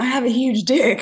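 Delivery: mock half-voiced boastful holler, mildly drunken-sounding. Retelling what a man at an outdoor venue kept saying: imitating someone yelling. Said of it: "he keeps yelling".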